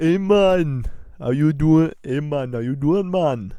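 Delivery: put-on Jamaican accent, slow, loud and drawn out. Playing a game-show contestant named Kendall: put-on Jamaican accent. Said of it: "how good my accent sounds".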